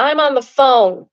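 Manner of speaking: booming, very loud, slow, drawn-out scream. Reading a story aloud, retelling a stranger's outburst: imitating a man screaming. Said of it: "he turns around and screams".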